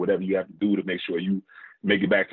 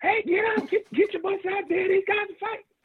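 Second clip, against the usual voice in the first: shrill, very high-pitched yelling holler. Act out a man coming back into the locker room to the players, imitating high-pitched yelling. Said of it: "he comes back in the locker room yelling".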